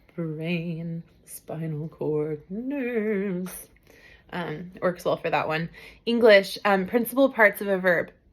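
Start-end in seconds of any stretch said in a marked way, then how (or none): 0.2-3.5 very slow, creeping, creepy spooky voice. Demonstrating a lesson's word list in a creepy, spooky voice. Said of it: "with like a creepy, spooky voice".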